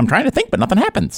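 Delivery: put-on very high, slapstick clown voice. Celebrating the slapstick trio Larry, Moe and Curly, give your best Curly impression. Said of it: "That's my best Curly impression".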